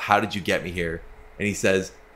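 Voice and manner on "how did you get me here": put-on mumbling voice. Retelling a film scene, quoting a character: imitating someone mumbling. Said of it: "mumbles to himself".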